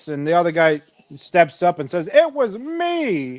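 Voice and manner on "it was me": very high, proud, self-satisfied, "me" stretched. Imagining the guilty man stepping up to the crowd: imitating someone proud. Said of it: "he's, like, proud of himself".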